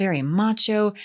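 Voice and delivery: ordinary talk, nothing marked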